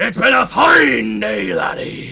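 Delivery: put-on, rough, swooping, growling pirate voice. Asked to sign off the show in your best pirate voice. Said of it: "sign us off in your best pirate voice".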